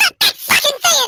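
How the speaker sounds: very high, loud, squeaky chipmunk voice. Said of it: "the chipmunk voice comes out".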